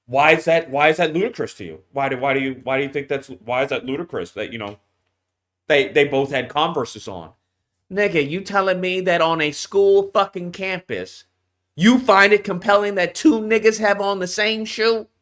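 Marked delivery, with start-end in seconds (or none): 0.1-7.3 very low, straight-faced, deadpan delivery. Retelling someone's question in court, imitating a straight-faced question. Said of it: "said with a straight face".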